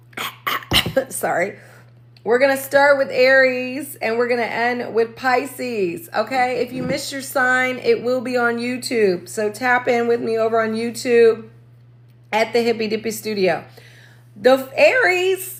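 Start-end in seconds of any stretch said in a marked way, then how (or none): 14.4-15.6 voice cracking up high. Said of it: "oh my God, my voice".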